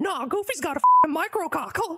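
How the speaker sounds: low cartoon voice with big swooping pitch swings. Trolling players in a public game lobby, in a Mickey Mouse impression. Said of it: "Today, we hit Phasmophobia Public Lobbies with our best [name] impression to do some good, honest trolling!".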